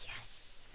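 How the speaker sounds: soft whispered yes.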